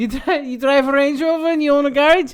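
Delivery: fake accent that sounds Scottish. Retelling what a man said to a boy, put-on Scottish-sounding accent. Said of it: "Why are you doing a Scottish accent?".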